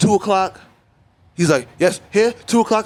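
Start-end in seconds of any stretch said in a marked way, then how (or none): 1.8-2.9 heavy, exaggerated put-on French accent, raised pitch. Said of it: "starts with a crazy accent".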